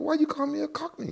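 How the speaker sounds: baffled and confused, very high-pitched.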